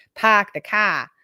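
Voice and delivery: loud, terrible attempt at a Boston accent. Comparing how Americans open their mouths, saying a phrase in a bad Boston accent. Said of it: "which is terrible. That was terrible. I'm out of my Boston accent".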